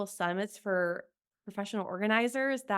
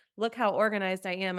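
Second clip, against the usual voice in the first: normal talking voice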